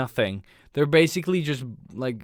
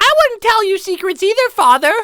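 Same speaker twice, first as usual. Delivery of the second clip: mock dubbed child voice, higher and louder; 12 dB louder than usual. Mocking the english dub of a film's children: imitating an adult faking a kid voice. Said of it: "a fifty-year-old woman trying to sound like a kid".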